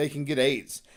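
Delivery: ordinary talk, nothing marked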